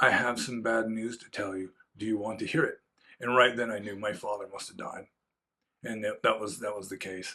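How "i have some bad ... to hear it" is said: put-on very soft, hushed voice. Recalling a woman visiting to deliver bad news: imitating her softest voice. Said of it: "she said in just the softest voice".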